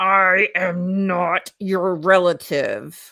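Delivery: speaking through gritted teeth. Wife retells what her husband said during a screaming argument, retelling speech through gritted teeth. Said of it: "through gritted teeth".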